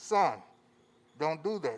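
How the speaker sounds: mock firm, strict, stern parent voice. Recalling a mother's warning to her son: imitating a stern mother. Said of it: "she said in her most stern voice".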